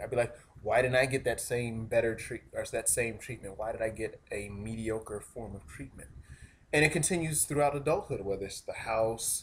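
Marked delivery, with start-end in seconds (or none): none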